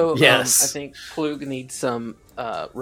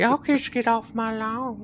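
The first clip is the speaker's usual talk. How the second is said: put-on old man voice, much higher; 10 semitones higher than usual. Voicing the imagined character, the player speaks in Herbert from Family Guy voice. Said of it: "I imagine he talks like Herbert".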